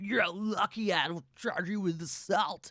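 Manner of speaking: put-on loud, slow, very drunken drawl. Retelling a TV scene line to a co-host: imitating Stabler sounding drunk. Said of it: "he says it like he's fucking wasted".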